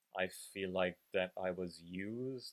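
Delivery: ordinary delivery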